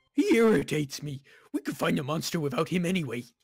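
menacing, scornful, hostile wolf voice.

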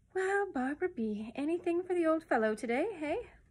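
high, sweet-talking, coaxing wheedle. Reading a story, the starling speaks to Barbara at her cot: soft, wheedling voice. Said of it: "he said in a soft, wheedling voice".

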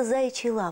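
ordinary delivery

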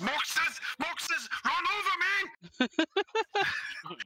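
very high, very slow, drawn-out yell. Playing an ogre bridging rock and boat, calling a companion: shouting in character. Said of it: "I'm shouting".

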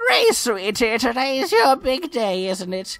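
put-on elderly woman's voice. Voicing a character who speaks to Ghrei: old lady voice. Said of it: "I'm gonna give her an old lady voice for sure".

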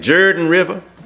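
put-on old-time rural country way of speaking. Telling the story of Moses watching Joshua, saying it like old country folks. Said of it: "let me say it like the old country folks used to say".

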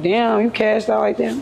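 normal talking voice

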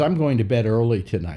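ordinary delivery

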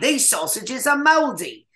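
London Cockney delivery. Recalling a big line from a past acting role, Cockney accent. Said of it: "I had to take Cockney accents".

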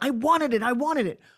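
aggressive, forceful, pushy, demanding insistent delivery. Recalling early acting ambitions, aggressive voice. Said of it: "Can you hear the aggression in my voice?".

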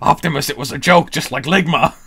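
loud, high, belted villain voice. Retelling a collaborator's joke line from a film, in Megatron voice. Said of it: "in his Megatron voice goes".

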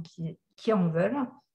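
ordinary talk

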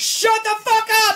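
very shrill, very high, very loud screaming. Imagining the frustrated spotter out there, imitating someone screaming. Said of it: "screaming out there".

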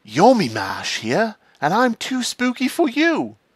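very high, swooping, sing-song put-on voice. Doing a Yami Mash impression while reading card answers. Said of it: "Do you like my Yami Mash impression".

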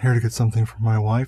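put-on creepy whisper. Retelling a creepy movie scene, imitating the killer: imitating a creepy whisper. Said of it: "his whispering is".

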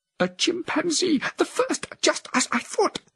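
very high, eager, excited cry of surprise. Cornelius reacts to news the woman read in a journal, exclaiming. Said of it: "Cornelius exclaimed".

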